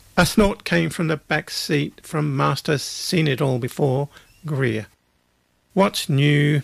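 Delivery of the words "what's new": put-on bored, flat, unimpressed teenage drawl. A teenager in the back seat responds in a bored teenage drawl. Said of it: "He drawled in the bald tones of a teenager".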